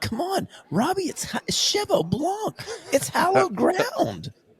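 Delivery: very high, earnest, swooping sing-song. Teasing another speaker about his earnestness: imitating Andrew's earnest tone. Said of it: "this is my impersonation of Andrew".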